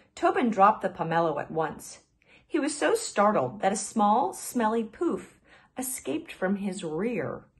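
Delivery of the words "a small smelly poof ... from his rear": plain reading voice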